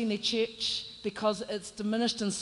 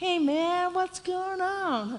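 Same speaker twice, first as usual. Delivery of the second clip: put-on, easygoing Californian accent, slow and drawn out; 8 semitones higher than usual. Retelling what the guys said, in a Californian accent. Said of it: "I'm trying to be like, you know, Californian".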